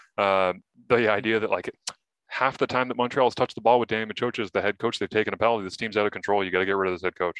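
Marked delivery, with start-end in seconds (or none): none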